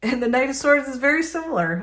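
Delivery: talking through laughter. Speaker explaining the knight of swords card, laughing while talking. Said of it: "I'm sorry, I keep laughing".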